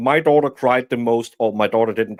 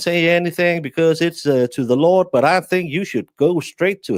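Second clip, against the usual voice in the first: put-on Southern drawl, much higher pitch; 6 semitones higher than usual. Acting out a quote, the speaker delivers it in a southern drawl impression. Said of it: "you do a better Southern drawl than even I do".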